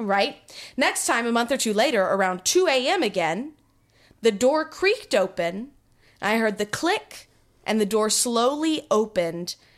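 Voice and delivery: ordinary delivery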